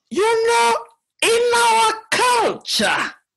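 squeaky, sing-song, very high, swooping put-on voice. Imitating how such a statement usually begins, in a high-pitched voice. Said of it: "Usually in a more high-pitched voice".

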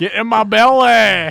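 very slow, loud, greedy, drawn-out delivery. Acting out Shrek suddenly trying to eat a baby: Shrek voice. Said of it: "Shrek just all of a sudden started trying to eat a baby".

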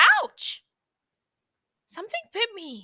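very high, shrill, yelped, swooping exclamation. Narrator reads a character stung by a scorpion, exclaiming. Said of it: "Lucy exclaimed".

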